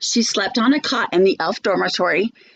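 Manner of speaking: plain reading voice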